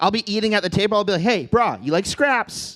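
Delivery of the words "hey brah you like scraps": put-on Hawaiian pidgin accent. Talking to a pit bull: speaking pidgin. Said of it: "There's one time I will talk pidgin".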